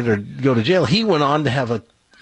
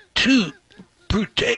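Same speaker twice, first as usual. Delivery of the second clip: put-on voice of a dying man; 9 semitones higher than usual. Acting out a stabbed man's last words: dying stabbed man voice. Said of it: "This is my impression of a dying stabbed man".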